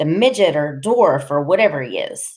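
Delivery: plain reading voice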